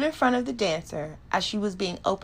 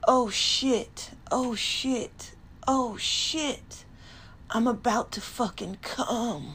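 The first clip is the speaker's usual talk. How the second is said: hoarse, raspy, slow drawl; 3 semitones higher than usual. Reading an erotic story aloud, the narrator voices G's words in a raspy voice. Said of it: "G said in a raspy voice".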